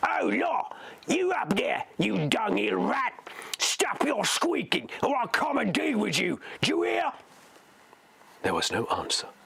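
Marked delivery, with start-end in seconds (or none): 0.0-7.1 savage, high-pitched snarling orc voice. Narrator reads an orc shouting up at someone squeaking above, in a snarling orc voice. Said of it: "a snarling orc voice rang out".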